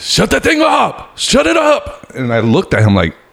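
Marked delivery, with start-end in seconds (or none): 0.0-2.1 abrupt, sudden yelling, pitched very high. Retelling how the man sitting next to him suddenly shouted during the movie, retelling a yell. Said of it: "he started yelling".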